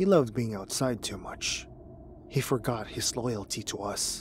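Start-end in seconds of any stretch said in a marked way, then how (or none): none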